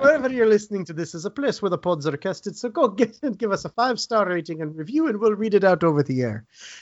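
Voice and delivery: poor put-on Irish accent, high. A podcast host signs off to listeners in a bad Irish accent. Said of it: "this is the worst Irish accent ever made".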